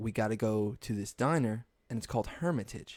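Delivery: ordinary talk, nothing marked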